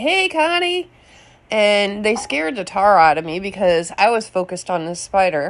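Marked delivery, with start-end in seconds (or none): 0.0-0.9 put-on very high, shrill hollering. Retelling neighbors driving by and calling out: imitating neighbors yelling. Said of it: "they're yelling".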